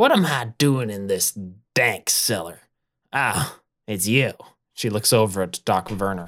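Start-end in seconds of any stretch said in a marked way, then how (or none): 0.0-4.3 saucy, mouthy, cheeky attitude. Voicing a character waking up in a dank cellar: sassy. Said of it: "no need to get all sassy".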